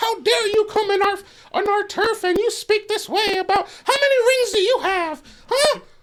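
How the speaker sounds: very high, shrill, loud, taunting fan rant. Acting out how Niners fans sound: imitating a Niners fan. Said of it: "that's what Niners fans sound like".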